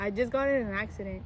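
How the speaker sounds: ordinary delivery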